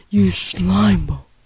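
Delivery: scary, put-on creature voice. Trying out a Jabba voice and asking if it's right, in a scary Jabba voice. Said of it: "I sound scary".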